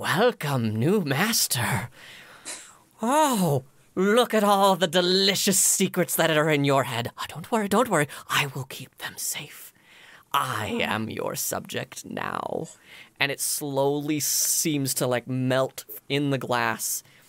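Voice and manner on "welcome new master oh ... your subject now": ghostly spirit voice. Voicing the spirit in the crow skull greeting its new master: voicing the crow skull spirit. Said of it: "And you hear".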